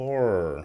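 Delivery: horror, sounding as if choking. Trying to pronounce the word when asked how to say it: saying horror like choking.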